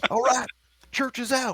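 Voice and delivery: very high, shrill war cry yell. Narrating a fight as a character lunges with a knife, yelling. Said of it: "and he yells".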